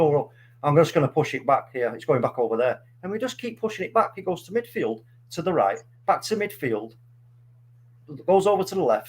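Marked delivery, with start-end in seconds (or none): none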